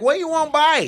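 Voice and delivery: acted brash, loud, high hollering vendor voice. Retelling how a vendor with his foot on a stool greeted them: imitating someone talking loudly. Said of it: "he's loud as shit".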